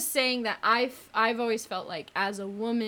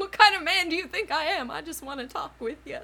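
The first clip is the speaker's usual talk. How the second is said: high, put-on southern accent, talking horse voice; 6 semitones higher, 4 dB louder than usual. Retelling a man's reply in an awkward story, in a southern accent impression. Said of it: "Is that your horse impression? It's very southern".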